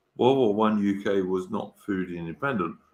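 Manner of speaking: plain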